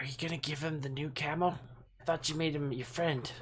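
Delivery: hushed, in-character stage whisper. Speaking in character to Estella during the game: half-whispering in character. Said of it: "I'm gonna whisper to Estella".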